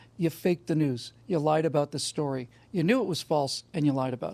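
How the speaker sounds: normal talking voice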